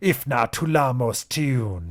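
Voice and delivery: loud, rasping horror creature voice. A horror stands right behind the dreamer and speaks, raspy horror voice. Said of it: "it rasps".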